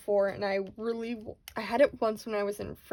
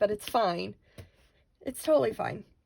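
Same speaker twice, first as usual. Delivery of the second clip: teary voice, choking up, fighting back tears. Talking about this for the first time in a while: tearing up. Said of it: "now I'm tearing up again".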